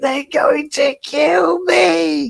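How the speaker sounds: very high, creaky, drawn-out panicked howl. Retelling a dog's panic at the vet: imitating a dog's scream. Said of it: "He just screamed like".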